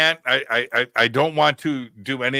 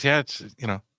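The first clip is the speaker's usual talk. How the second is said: put-on offhand, nonchalant tone, quieter; 5 dB quieter than usual. Retelling a contractor's reply about tracking aliens: imitating an offhanded tone. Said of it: "it was so offhanded the way he just said it".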